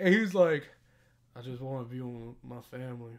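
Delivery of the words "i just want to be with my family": barely audible, very quiet, low muttering. Retelling what another man said to him, imitating his mumble. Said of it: "He mumbled that shit".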